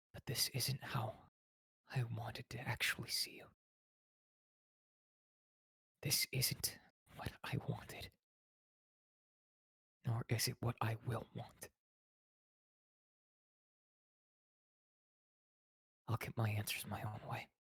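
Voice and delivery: soft, hushed whisper under the breath. Whispering to a beaten captive held by the chin, in character: whisper. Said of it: "I'm gonna whisper this to her".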